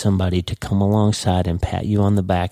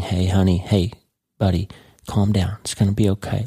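put-on, mock-gentle, soft, soothing voice. Explaining a Bible verse, imitating a soft voice. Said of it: "the soft voice of God with his arm around you".

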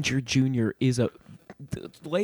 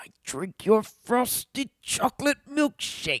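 very high, exaggerated cartoon dad voice; 10 semitones higher than usual. Joking about a crossover, voicing Daniel Plainview as first-season Homer Simpson. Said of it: "if Daniel Plainview was first season Homer Simpson".

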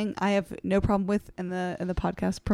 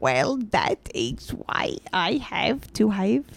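very slow, vague Eastern European accent. Trying out an accent when asked to: vague eastern european accent. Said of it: "immediately turning into vague Eastern European".

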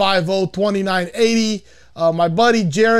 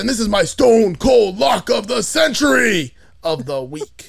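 rough, gruff cartoon tough-guy voice, slow swooping drawl. Showing off one of the few voices they can do, Carl voice. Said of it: "I can do Carl. This is Carl from Aqua Teen Hunger Force".

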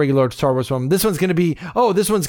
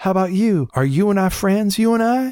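put-on robot voice with Southern accent, pitched up; 5 semitones higher than usual. Retelling a park robot questioning the man who runs the park, in a southern accent. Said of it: "with the Southern voice and goes".

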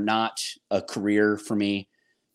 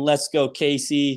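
put-on child scream, higher, slower; 5 semitones higher than usual. Retelling your son cheering for you at a game: imitating a child screaming. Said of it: "he's screaming".

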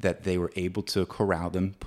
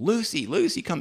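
very high-pitched, shrill, calling yell; 11 semitones higher than usual. Retelling how the mother-in-law called the dog in: imitating someone yelling. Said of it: "she starts yelling".

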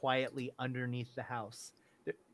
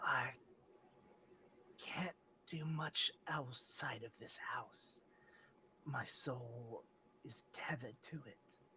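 very quiet, gentle, soft-spoken hushed near-whisper; 3 semitones lower, 15 dB quieter than usual. A game master voices a character answering a request for help, soft-spoken voice. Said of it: "you hear the soft-spoken voice".

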